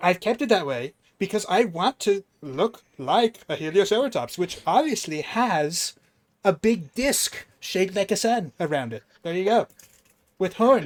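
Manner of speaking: put-on American politician accent. Asked to do it in a Trump accent: Donald Trump accent. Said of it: "do it in a Trump accent".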